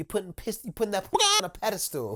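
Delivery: swooping, animated delivery. Quoting a saying about putting something on a pedestal: imitating Ramon saying it. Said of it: "as Waz Ramon would say".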